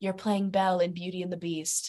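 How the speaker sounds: whispered in a hushed voice. Retelling how someone turned and broke the news: imitating someone whispering. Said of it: "he just turns around and whispers".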